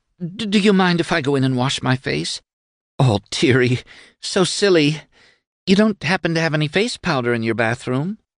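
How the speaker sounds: stammering, halting, pitched very high. Narrator reading a woman character's spoken line, stammering. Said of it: "She stammered".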